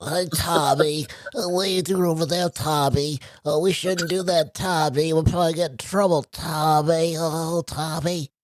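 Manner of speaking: blocked-up, stuffy nose, cartoon-style voice. Showing friends that Steven sounds like Chuckie from Rugrats, in a stuffy-nosed Chuckie voice. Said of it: "who's always got like a perpetually stuff".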